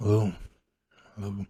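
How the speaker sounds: very tired, worn-out, exhausted, just-woken voice. Voicing someone woken late at night answering the phone, very tired voice. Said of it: "and then there a very tired voice".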